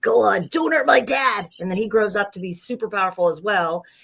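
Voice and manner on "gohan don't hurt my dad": put-on loud, rough little boy voice. Voice actress cast as Gohan demonstrates the role, Gohan little boy voice. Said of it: "they actually liked my little boy voice".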